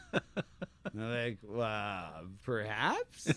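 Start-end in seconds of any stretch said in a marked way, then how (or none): 1.4-3.3 "perhaps" rising in pitch like a question. Retelling own reply to an offer of fifty bucks: rising question intonation. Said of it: "you do it like a question mark".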